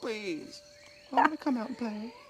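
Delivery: put-on pleading dog voice, very high and whiny. Voicing a complaining dog who wants to come out: voicing the dog, put-on pleading. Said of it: "She's all".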